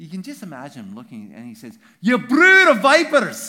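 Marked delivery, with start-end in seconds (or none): 2.0-3.5 shrill, booming, loud, high put-on Scottish accent. Acting out what he says to them at his baptism, in a Scottish accent. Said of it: "He has to say it with a Scottish accent".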